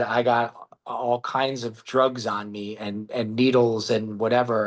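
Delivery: ordinary delivery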